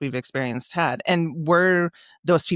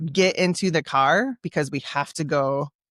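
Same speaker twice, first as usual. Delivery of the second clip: usual speaking voice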